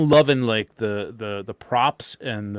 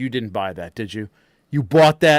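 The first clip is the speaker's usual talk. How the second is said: put-on jealous rage, louder; 4 dB louder than usual. Retelling seeing someone come out holding the bottle: imitating own jealous outburst. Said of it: "all the jealousy was raging in me".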